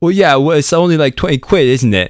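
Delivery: London Cockney twang. Recalling what they started saying at that point, in a Cockney accent. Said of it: "started talking in a Cockney accent".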